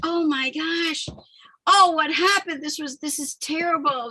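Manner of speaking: sobbing through the words, tearful. Recalling being in the shower after an arrest, the speaker reenacts their own crying. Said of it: "I'm just crying like".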